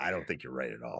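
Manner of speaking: very low, gruff voice. Showing how to answer a guest on the show: gruff Kevin Conroy voice. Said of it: "I really wanna kinda go gruff".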